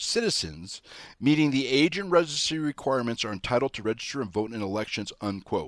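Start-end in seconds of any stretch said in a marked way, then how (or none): 0.0-0.8 heavy emphasis placed on the word "citizens". Quoting the New York State Constitution, with stress on citizens. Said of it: "let me emphasize that word".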